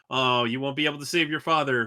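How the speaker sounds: ordinary talk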